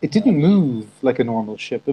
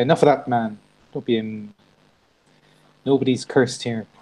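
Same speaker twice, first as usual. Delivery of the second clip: usual speaking voice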